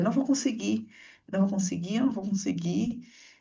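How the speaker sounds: frozen-up, panicked, repeating the same words. Retelling freezing at a gap while pregnant: retelling own panicked words. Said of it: "Entrei em pânico".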